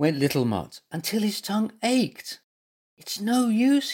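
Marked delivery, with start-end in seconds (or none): 3.0-3.9 whisper, much higher and slower. In bed, after licking at the spots, he speaks to his companion; whispered. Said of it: "he whispered".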